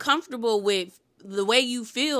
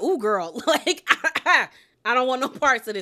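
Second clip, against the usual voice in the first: put-on, uneasy, giggly, nervous laughing voice; 2 semitones higher than usual. Describing how someone laughed at lunch, imitating a nervous laugh. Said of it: "it was like a nervous kind of like".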